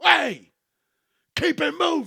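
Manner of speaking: very high, loud, swooping, swinging yell. Retelling a bike cop telling cars to move: imitating a cop yelling. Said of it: "yelling at people".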